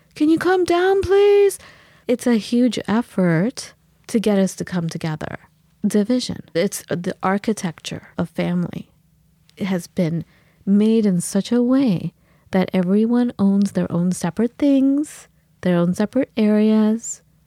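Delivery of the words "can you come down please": very high, loud calling out. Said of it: "We have to yell".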